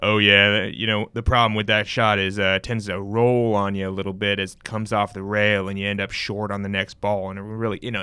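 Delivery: put-on deep, low-pitched Texan accent. Describing pool announcers to a listener, doing a Jeremy Jones impression. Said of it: "also got this deep Texan ac- Texan voice".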